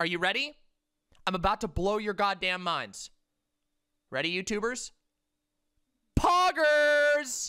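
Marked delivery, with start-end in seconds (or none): 6.2-7.5 loud, high-pitched yell. Revealing a new slang word to the viewers: yelling loudly. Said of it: "I yelled that so loud".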